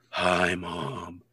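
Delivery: put-on indifferent, aloof too-cool teenager voice, brushing-off tone. Retelling a movie scene, teenager greets his mom: imitating a too-cool teenager. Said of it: "'Cause he's too cool".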